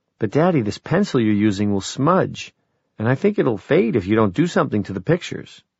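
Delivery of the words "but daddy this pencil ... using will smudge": usual speaking voice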